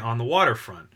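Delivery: normal talking voice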